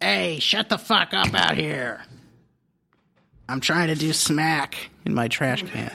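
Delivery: slow, grumpy, grouchy put-on character voice. Imitating what Oscar says popping out of his trash can: Oscar the Grouch voice. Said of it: "and then he would say, like".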